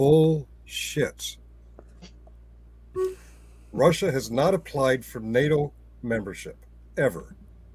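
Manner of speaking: very slow, deliberate, every word distinct. Rebutting the other speaker, saying it very slowly and clearly. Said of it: "I'm going to say this very slowly and clearly".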